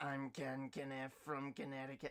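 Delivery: put-on character voice. Showing two voices, first the proper Ken Kniff voice. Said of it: "I can do the proper Ken Kniff".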